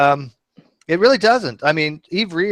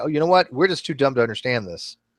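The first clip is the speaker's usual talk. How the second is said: plain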